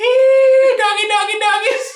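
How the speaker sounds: loud, slow coaxing call, "hey" stretched long. Acting out a woman coaxing coyotes out of the woods: imitating a woman calling dogs. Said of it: "And she's just like".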